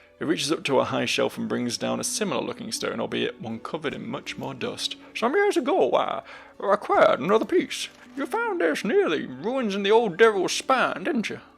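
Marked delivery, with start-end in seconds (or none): 5.1-11.4 very high, animated, sing-song prospector character voice. Reading a game's dialogue aloud, voicing a trader talking to the player, in a prospector voice. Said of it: "this one was like the prospector".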